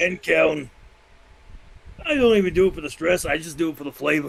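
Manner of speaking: smoker character voice. Playing a woman who has smoked ten packs a day for forty years, chain-smoker voice. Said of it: "I cannot do that voice too often".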